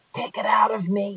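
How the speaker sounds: weak, barely-there voice. A man with an axe in him asks the narrator kneeling beside him, in a faint voice. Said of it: "In a faint voice".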